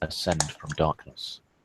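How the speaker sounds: normal talking voice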